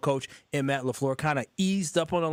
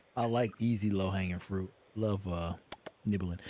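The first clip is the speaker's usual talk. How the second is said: very low, soft, creepy delivery; 8 semitones lower, 5 dB quieter than usual. Repeating another speaker's phrase about low-hanging fruit: creepy-sounding delivery. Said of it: "That sounded super creepy".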